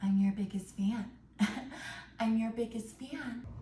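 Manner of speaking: put-on whisper. Retelling how Annie greets Paul as he comes to: Annie whispering, imitated. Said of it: "she's, like, whispering to Paul".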